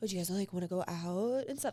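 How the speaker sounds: put-on flirty man's voice. Retelling how an interviewed guy asked them out, imitating his voice. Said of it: "doing this voice".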